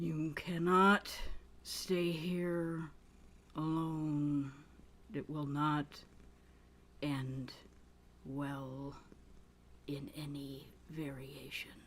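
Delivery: weird, unnaturally deep intoned voice, drawn out. Retelling what she said to the group, weird deep intoned voice. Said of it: "a really weird, deep intoned voice that she should not be able to make".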